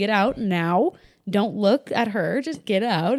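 sassy delivery. Retelling how the doctor cleared the room: imitating a sassy order. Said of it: "kinda sassy".

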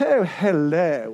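put-on posh Belper accent, drawn-out. Describing the town of Belper, a speaker shows how people there talk: put-on Belper accent. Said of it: "if you talk like this".

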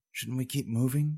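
unnerved, high, hushed half-whisper. Reading a companion, unnerved by the woman's laughter, half-whispering a question. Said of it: "whispered Tarala".

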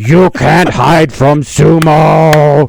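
very slow, high, stretched-out, drawn-out yell. Retelling sprinting after the kids in a sumo suit, retelling a yell. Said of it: "And I'm yelling".

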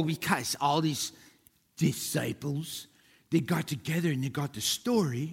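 scoffing, mocking put-on voice. Retelling the hoax claim the speaker has heard many times, in a mocking put-on voice. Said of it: "They didn't talk like that".

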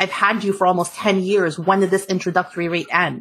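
ordinary delivery

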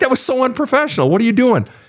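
high, shouted, scolding reproach. Speaker retells what a woman shouted to them over the phone, retelling a shout. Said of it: "she shouted to me".

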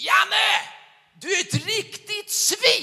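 super-loud, very high, drawn-out yell. Retelling shouting through a window crack at a passerby, re-enacting a super-loud shout. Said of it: "ropade jag superhögt".

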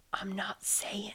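whispering. Toucan, asked by Rat whether the soup was good, whispered. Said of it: "whispered Toucan".

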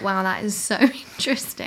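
tongue-in-cheek, self-teasing, awed and impressed. Retelling own past thought on seeing a lemon: imitating own self-mocking tone. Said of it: "I sound really like I'm mocking myself".

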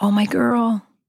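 imitated whisper. Retelling what dad said at the best moment: imitating a whisper. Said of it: "whispers in the best moment".

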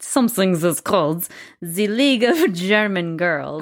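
slipping into a German accent. Naming a youth group while telling a history, slipping into a German accent. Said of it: "I just slipped into a German accent there".

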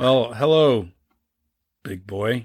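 put-on flat, deadpan delivery. Recapping a scene with a co-speaker, the speaker is imitating Ashley Johnson's deadpan. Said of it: "she's so deadpan".

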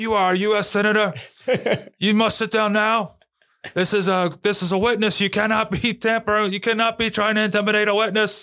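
very high-pitched, shrill yelling. Retelling how the chair yelled at a senator: imitating someone yelling. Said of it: "is yelling at him".

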